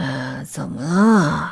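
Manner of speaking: low, groggy, drowsy, befuddled half-asleep voice. Woken on the sofa by a scream, someone answers in a groggy, half-awake voice. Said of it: "是阿朗迷迷糊糊的声音".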